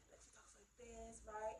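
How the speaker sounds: hushed, very soft, easygoing, calm, mellow murmur. Speaker recommending a video, imitating the woman's calm, mellow voice. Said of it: "She's so calm and mellow".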